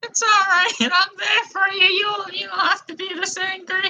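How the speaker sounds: very high, gentle, soothing, drawn-out voice. Voicing the in-game character calming an angry player: voicing Nicole Brown Simpson. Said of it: "That she just said she's there for you".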